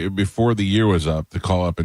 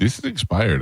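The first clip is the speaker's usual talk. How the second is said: imitated thick Bangladeshi accent. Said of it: "through his thick, thick Bangladeshi accent".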